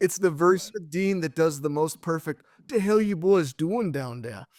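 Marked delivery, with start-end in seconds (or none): 2.6-4.5 put-on convincing elderly grandfather voice. The speaker does the other speaker's grandpa's voice, imitating someone's grandpa. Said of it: "you do my grandpa's voice better than I do".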